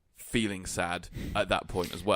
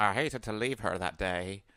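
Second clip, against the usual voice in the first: put-on female narrator voice. Quoting how the film's narrator describes her own death: impression of the female narrator. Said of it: "that was a brilliant, um, impression".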